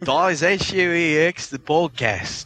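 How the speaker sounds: very slow fake Australian accent. Saying the podcast sign-off when asked for Australian: Australian accent. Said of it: "they're probably gonna crucify me for this accent".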